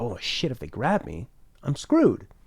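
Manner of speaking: normal talking voice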